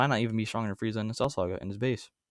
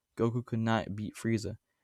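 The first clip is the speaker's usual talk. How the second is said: ordinary talk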